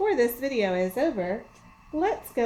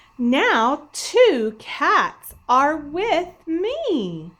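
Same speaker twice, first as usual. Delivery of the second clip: very slow, loud, emphatic, strongly felt delivery; 5 semitones higher, 7 dB louder than usual. Showing how to read a sentence ending in an exclamation point, with strong feeling. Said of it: "read my sentence with strong feeling".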